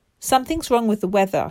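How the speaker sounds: ordinary delivery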